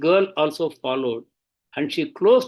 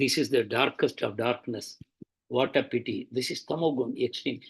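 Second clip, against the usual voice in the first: soft mumbling under the breath; 4 semitones lower, 7 dB quieter than usual. Telling how a woman shouted at Prabhupada, imitating Prabhupada mumbling. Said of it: "Prabhupada was mumbling".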